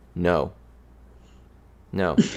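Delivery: put-on flat deadpan delivery. Imagining someone at the door asking for a corkscrew, retelling a deadpan reply. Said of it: "I would just deadpan be like".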